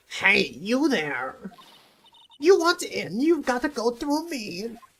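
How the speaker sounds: put-on elderly woman voice. Voicing a security guard character in an old lady voice. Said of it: "how I used to do the old lady voice".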